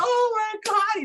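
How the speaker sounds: mock cry through laughter, very high-pitched. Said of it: "he's laughing".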